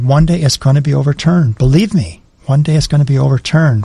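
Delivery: ordinary talk, nothing marked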